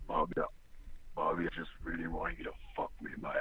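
rough, raspy whisper. A caller on a phone line asking for Bobby, in raspy Lonnie Fuzzy voice. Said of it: "sounds like he's been eating razor blades".

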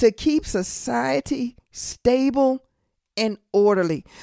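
very slow, measured, deliberate, each word drawn out. A speaker explaining a bible teaching to listeners, speaking really slowly. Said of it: "I'm going to say this really slow".

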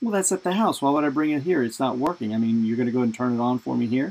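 heavy, dripping, very sarcastic delivery. Retelling a father's reply to a store clerk asking for the manual: imitating dad's sarcastic tone. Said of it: "very, very sarcastic".

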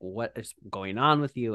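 ordinary talk, nothing marked

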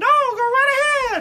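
high, loud squeaky voice. Acting out Walt Disney Day, a performer answers Goofy in a high Mickey Mouse voice. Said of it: "such a high voice".

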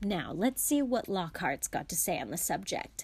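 ordinary delivery, nothing marked

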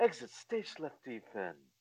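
slow, breathy cartoon voice, breathed out slowly. Quoting a cartoon catchphrase in the character's voice: Snagglepuss voice. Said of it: "Snagglepuss when he would talk like that".

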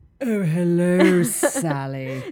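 very loud, affected, pretentious upper-crust posh voice. Jokingly revealing a supposed real voice: pretentious put-on voice. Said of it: "This is my real voice. ... too pretentious".

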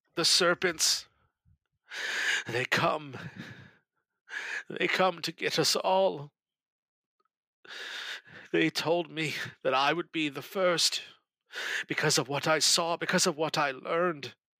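high, tearful voice, speaking through streaming tears. A narrator voices Lucius in bed, tears streaming down his face; Lucius speaking through tears. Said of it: "the tears are streaming down his face".

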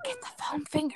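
put-on whisper. Retelling what another speaker whispered: imitating someone whispering. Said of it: "She's, like, whispering to me".

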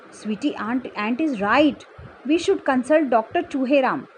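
ordinary delivery

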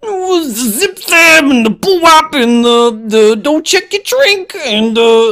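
slow, high, riffing nonsense syllables. Answering a request to do a Bill Cosby impression: Bill Cosby impression. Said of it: "Can you do a Bill Cosby impression?".

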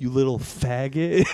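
put-on hushed whisper. Retelling what a woman whispered behind the speaker at the register, imitating a whisper. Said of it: "whispered in my like to my neck".

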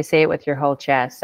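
ordinary delivery

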